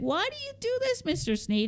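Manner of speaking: very high, swooping, whiny voice. Retelling complaining once to the man who graded them harder, retelling a whine. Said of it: "one time I whined".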